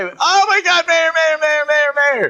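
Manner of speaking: put-on excited shouting. Recalling a man thrilled to see the Las Vegas mayor, imitating excited shouting. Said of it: "never seen somebody so excited".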